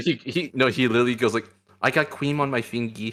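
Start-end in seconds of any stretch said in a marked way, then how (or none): 1.8-3.1 put-on small-child voice with baby talk. Demonstrating a voiced catboy character reverting to a child: little kid voice. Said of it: "the little kid voice".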